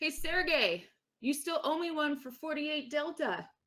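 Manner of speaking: calling out as if across a distance. Playing a character calling to someone ten meters away: raised voice calling out. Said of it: "in a raised voice, she goes".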